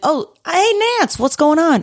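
very high-pitched, casual, offhand tone. Retelling how an actor greeted a director on set: Dustin Hoffman impression. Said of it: "I love your Dustin Hoffman impression".

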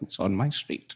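put-on old man voice. Retelling a prank call to a taxi company, put-on old man voice. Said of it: "I'd pretend to be an old guy".

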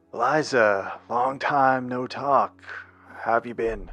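rough, hoarse put-on voice. Game narrator voicing Odin calling Liza after a long time, raspy Odin voice. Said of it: "You hear the kind of raspy voice of Odin".

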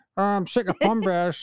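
put-on Northeast English accent. Describing a man from the Northeast, the speaker imitates how he talks: Northeast accent. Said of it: "he's from the Northeast, so he talks like that".

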